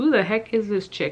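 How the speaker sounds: usual speaking voice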